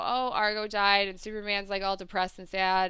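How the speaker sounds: ordinary delivery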